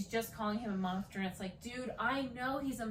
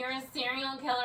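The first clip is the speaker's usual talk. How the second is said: play-acted, everything delivered as a scream; 3 semitones higher, 4 dB louder than usual. Complaining about a TV character who screams everything, imitating Deb's screaming. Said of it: "she's screaming".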